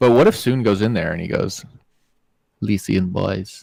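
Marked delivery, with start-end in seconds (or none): 2.6-3.6 put-on failed French accent, quieter. Picturing someone walking in and speaking, a failed french accent. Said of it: "That's not French".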